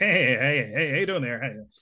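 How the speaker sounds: sleazy, slick used-car salesman voice. Actor demonstrating a rehearsal exercise, playing a scene as a skeevy used-car salesman voice. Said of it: "as if I'm a used car salesman, and I'm going to be a real skeevy, like talking fast".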